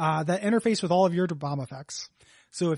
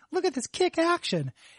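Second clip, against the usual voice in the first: put-on very high, little, prepubescent young boy's voice; 11 semitones higher than usual. Retelling a friend's old video game tape: imitating Derek Hayes's prepubescent voice. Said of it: "his little, like, prepubescent voice is like".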